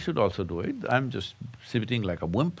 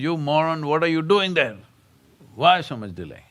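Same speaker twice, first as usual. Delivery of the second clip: put-on screaming parrot voice; 5 semitones higher, 6 dB louder than usual. Telling a story, imitating a screaming parrot. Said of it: "And the parrot screams".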